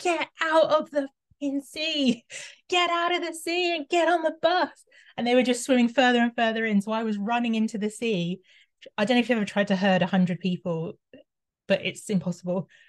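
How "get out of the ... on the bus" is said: very high, high-pitched screamed yell. Retelling running across a beach to get people onto a bus: retelling a scream at swimmers. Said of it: "screaming at 100 people in the sea".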